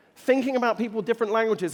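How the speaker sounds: rushed, overly fast delivery.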